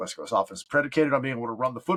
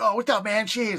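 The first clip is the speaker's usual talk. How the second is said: rough, weak put-on Philly accent, pitched up; 9 semitones higher than usual. Retelling friends who are Philly fans greeting on FaceTime: not-so-good Philly accent. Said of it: "I can't do a really good Philly accent".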